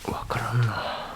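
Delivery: soft, hushed whisper.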